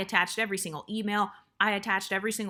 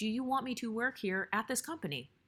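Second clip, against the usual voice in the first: very calm, level-headed, soft, direct tone; 2 semitones higher, 6 dB quieter than usual. Speaker retells what they asked a shocked listener, retelling a very calm tone. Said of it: "I said it in a very calm tone".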